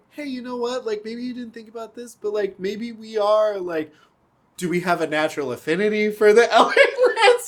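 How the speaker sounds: high, fake innocent, naive-sounding voice. A player acts out asking the game master a question: mock-innocent tone. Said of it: "in a very innocent".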